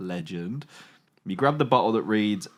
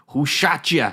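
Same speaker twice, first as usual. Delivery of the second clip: put-on loud, high old New York granny voice; 5 semitones higher, 6 dB louder than usual. In a story game, asking a wounded woman who shot her, Mark Wahlberg try. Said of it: "You sound like an old New York granny".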